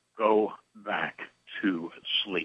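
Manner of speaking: low, ominous, foreboding voice. Retelling what the anesthesiologist said after waking mid-surgery, imitating an ominous voice. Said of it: "in an onerous voice".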